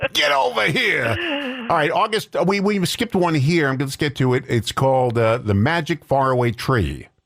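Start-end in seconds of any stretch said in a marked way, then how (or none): 0.1-1.1 very high, hot, frustrated shouting holler. Listing cartoon voices they can do, mock-frustrated Yosemite Sam impression. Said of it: "he gets all frustrated".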